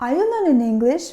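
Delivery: rising yes-no question tune on English. English lesson on question intonation, rising pitch on english. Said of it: "The intonation goes up".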